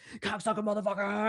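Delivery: piercing, very high yelling. Describing a video where a student yells at his teacher, retelling a yell. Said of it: "he's like yelling at the teacher".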